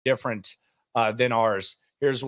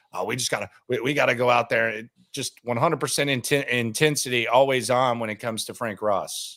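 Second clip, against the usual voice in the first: ordinary talk, nothing marked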